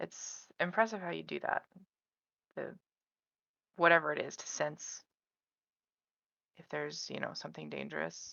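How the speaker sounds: speaking very softly, hushed. Going down the stairs, a player's character speaks to Braden: very quiet. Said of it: "just very quietly say".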